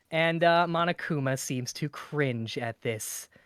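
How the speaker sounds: ordinary delivery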